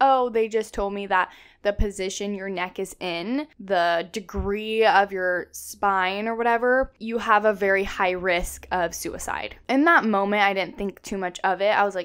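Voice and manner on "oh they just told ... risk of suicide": ordinary talk, nothing marked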